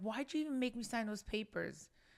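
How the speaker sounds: mock reproachful, blaming outburst, pitched high. Retelling yelling at Dad the other day: retelling own yelling. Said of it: "the other day I was yelling at him".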